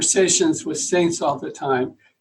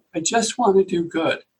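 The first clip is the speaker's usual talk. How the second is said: put-on adorably sweet, little child's voice; 3 semitones higher than usual. Retelling a kid's line to a saint in a scene: imitating a kid's sweetest voice. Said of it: "he just says in the sweetest voice".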